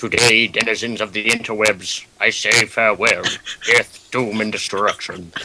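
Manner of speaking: viking-style character voice. Asked to play everyone off, [name] signs off in his Viking voice. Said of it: "in your Viking voice".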